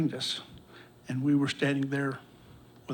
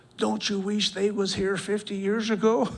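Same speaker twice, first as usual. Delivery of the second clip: really loud, high, raised voice; 7 semitones higher, 3 dB louder than usual. Retelling what a man said, standing close after big hugs, in a really loud voice. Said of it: "in a really loud voice".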